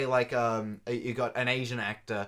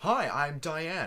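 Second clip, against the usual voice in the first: put-on American accent, pitched higher; 5 semitones higher than usual. Discussing an actress's English in a movie, speaker is imitating Diane's American accent. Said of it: "she can put on like a".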